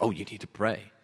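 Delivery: brief, curt whisper. Quoting what you hear in traditional households; curt whisper. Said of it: "curt whispered".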